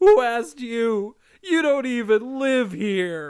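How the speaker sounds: talking between sobs, very high pitch. Recapping an episode and quoting DW's line, imitating DW sobbing. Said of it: "between sobs".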